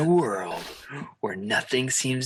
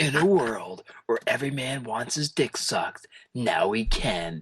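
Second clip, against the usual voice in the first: deep movie trailer announcer voice. Announcing a parody movie title: movie trailer announcer voice. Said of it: "movie announcer guy".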